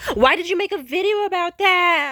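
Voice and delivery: very high, very loud, shrill, furious angry shout. Retelling a phone call where someone got angry: imitating someone yelling. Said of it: "And they yelled".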